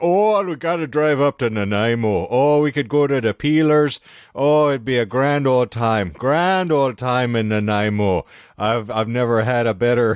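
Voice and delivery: put-on adopted Newfoundland accent. Retelling a drive with signposts for Nanaimo, in a Newfie accent. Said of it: "you're adopting, like, a Newfie accent".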